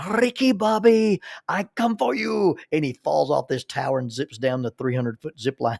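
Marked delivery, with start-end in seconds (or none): 0.1-2.6 mock scream, much higher, louder, slower. Retelling what a man screamed atop a zip-line tower, retelling a scream. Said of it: "he screamed at the top of his lungs".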